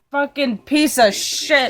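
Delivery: drawn-out, slow, seething, furious cursing. Retelling cursing after the ramen spilled: imitating own angry screaming. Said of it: "I just started just screaming".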